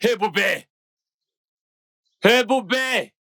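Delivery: shouting. Calling another speaker over from a room with untouched plates: shouting a name. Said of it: "Pourquoi tu cries mon nom de la sorte ?".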